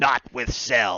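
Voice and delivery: sore, angry tone. Answering a question in character as Goku: mock-angry Goku voice. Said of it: "I wanted to make him sound angry".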